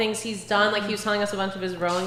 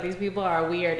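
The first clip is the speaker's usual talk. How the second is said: ordinary delivery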